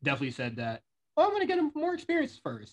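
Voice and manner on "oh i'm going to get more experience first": very high, swooping, squeaky sing-song put-on voice. Quoting a wrestler's own words, in a Millie McKenzie voice. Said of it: "Why did you use that voice?".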